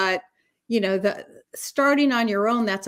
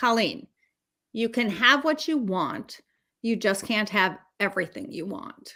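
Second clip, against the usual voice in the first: play-acted plain, blunt, matter-of-fact delivery; 4 dB quieter than usual. Retelling his reply when asked about his own Diet Coke, imitating a flat delivery. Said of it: "he very flatly said to me".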